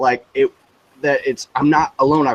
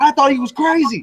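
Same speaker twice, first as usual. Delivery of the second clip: scream, higher; 13 semitones higher than usual. Retelling a friend yelling to someone in the backseat: imitating someone screaming. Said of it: "he's screaming and he's telling the dude".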